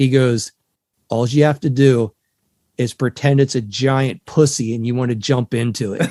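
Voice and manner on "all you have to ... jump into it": mock grave, earnest, dead-serious, solemn tone. Retelling what a man with his foot on his board told them, mock dead-serious tone. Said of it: "with the most serious tone of voice".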